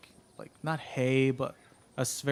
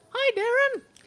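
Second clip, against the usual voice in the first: very high, loud rag doll puppet voice; 7 dB louder than usual. Voicing a rag doll puppet that greets a player character: rag doll puppet voice. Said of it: "you hear a voice coming from the rag doll".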